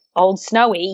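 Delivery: put-on Australian accent and pronunciation. Retelling how the speaker said the name back: Australian accent. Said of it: "my Australian accent".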